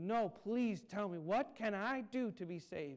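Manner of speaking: pressing, desperate, urgent pleading, slow and deliberate. Retelling a story, voicing a man who asks how to be saved: imitating an urgent plea. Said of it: "The man urgently".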